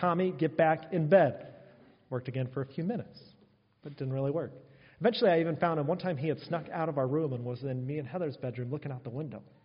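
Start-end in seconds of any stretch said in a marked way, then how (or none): 0.0-1.5 firm, no-nonsense, stern fatherly voice, slow. A father retelling ordering his child back to bed, putting on a stern voice. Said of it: "I used my stern voice".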